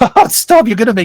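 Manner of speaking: giddy laughter while speaking. Voicing the professor being praised for his knowledge: laughing giddily in character. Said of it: "he laughs giddily".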